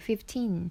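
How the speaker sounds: put-on fifteen with stress on second syllable teen. Explaining how to say fifteen hundred dollars, stress on teen in fifteen. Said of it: "teen의 강세가 있는 거예요".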